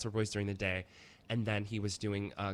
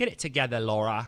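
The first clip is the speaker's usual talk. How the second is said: very loud, bad, fake British accent; 2 semitones higher, 8 dB louder than usual. Retelling their reaction to news about Laura Haywood, in a terrible British accent. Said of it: "That was a terrible accent".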